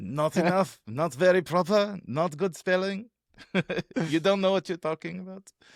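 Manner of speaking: put-on French accent, pitched high. Joking about French views on English spelling, put-on French accent. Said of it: "That was my uh, my uh, French accent".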